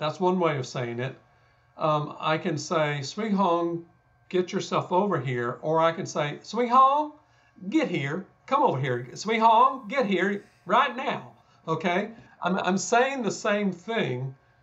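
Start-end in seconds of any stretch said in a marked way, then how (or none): 6.4-11.3 high-pitched, home-style way of talking. Showing another way of calling someone over, imitating relatives' way of talking. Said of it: "I just imitated every one of my relatives".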